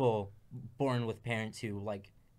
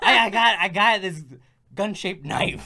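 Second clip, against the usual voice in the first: put-on New York accent, higher and louder; 9 semitones higher, 14 dB louder than usual. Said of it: "like, New Yorker accents".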